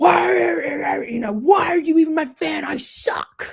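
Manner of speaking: loud, high-pitched yelled outburst. Retelling a story where a bad golfer yells at his last fan; retelling a yell. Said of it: "He yells at her".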